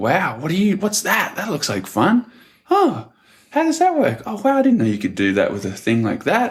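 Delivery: very high, sing-song, swooping, wondering, curious tone. Imitating how people generally react to them now, mimicking a higher-pitched tone. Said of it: "It's like this higher pitched sort of tone".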